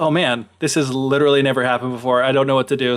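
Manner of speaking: plain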